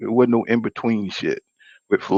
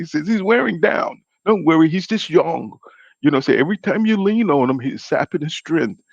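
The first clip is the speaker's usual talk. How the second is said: clumsy, bad put-on English accent, higher voice; 6 semitones higher than usual. Retelling what a man told a boxer about his opponent, in a failed attempt at English accent. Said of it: "I can't even do the damn English accent".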